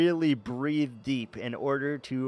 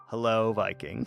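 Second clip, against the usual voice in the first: put-on weary sigh, lower pitch; 4 semitones lower than usual. Acting out how he begrudgingly types hi back, imitating a deep sigh. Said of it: "he has to take a deep sigh and he's like".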